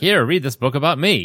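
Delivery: high, showman-style carnival barker voice. Retelling what the bookstore worker said to them, John Carter as a carnival barker. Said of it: "I don't know why he sounds like a carnival barker".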